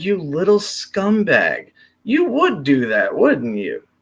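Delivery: play-acted, amused, swooping jab through laughter. Imagining Putin's reply to a question: imitating Putin laughing. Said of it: "who just laughs at the question, going".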